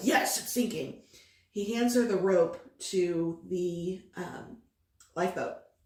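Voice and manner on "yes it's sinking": brusque, gruff sea-captain voice. Retelling how the captain answered the girl: imitating a gruff reply. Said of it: "is very gruff with her and is like".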